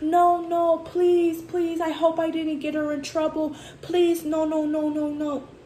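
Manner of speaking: acted, high, drawn-out, frantic, desperate pleading. Telling listeners what she said the guy did, acting out panicked pleading. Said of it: "she said the guy was like".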